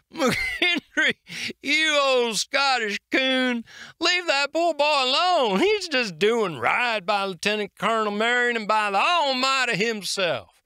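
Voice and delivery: jovial, laughing through it. A sergeant answers a fellow soldier's question, laughing quite heartily. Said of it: "Sergeant [name], a great owl of a man, twice as clever and half as frightening." / a great owl of a man, twice as clever and half as frightening." / Sergeant [name] responded, / Laughing quite heartil".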